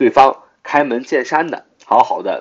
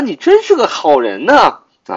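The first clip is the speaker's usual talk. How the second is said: sarcastic, ironic, swooping sing-song tone; 8 semitones higher, 3 dB louder than usual. Showing how tone changes a line's meaning: slightly sarcastic tone. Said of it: "用略带讽刺的语气说啊".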